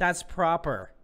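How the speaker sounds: put-on heaviest possible, very strong American accent. Retelling how they just said a British word: very strong American accent. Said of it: "in the most American accent that I possibly could".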